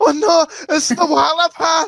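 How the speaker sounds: tearful, high, drawn-out sobbing cry. Retelling a school story, imitating girls in the corner: imitating crying girls. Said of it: "girls in the corner of the room crying like".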